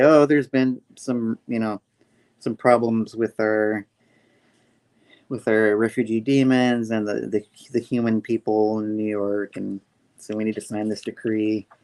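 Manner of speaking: normal talking voice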